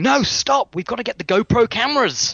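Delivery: put-on very high scream. Retelling the director interrupting a pool test: imitating a screaming director. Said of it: "the director started sc-, screaming, going".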